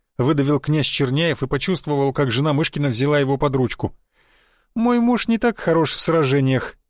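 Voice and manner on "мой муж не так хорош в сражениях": scornful, mocking, derisive tone. Myshkin's wife speaks to Prince Chernyaev during the duel; mocking. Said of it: "насмешливо сказала она".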